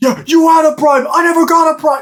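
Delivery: shrill, very high-pitched screaming outburst. Describing a favorite movie scene where Mick is leaving, retelling Rocky's screaming. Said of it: "Rocky just starts like screaming".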